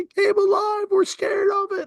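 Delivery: put-on, very high, tearful, frightened children's voice. Retelling what the scared daughters said, imitating crying daughters. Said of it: "My daughters are crying".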